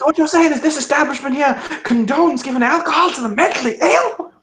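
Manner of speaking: very high, shrill, outraged and angry screaming yell. One side of a screaming match at an establishment: screaming angrily. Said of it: "as this screaming match is going on".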